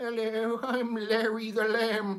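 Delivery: pitched way up and slow. Recalling a kids' TV show from childhood, doing Larry the Lamb voice. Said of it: "he did a voice like that".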